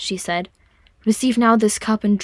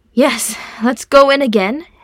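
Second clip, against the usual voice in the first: louder, projected, carrying voice; 4 semitones higher, 5 dB louder than usual. A man leading his companions back in after groaning quietly, louder voice. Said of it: "he said in a louder voice".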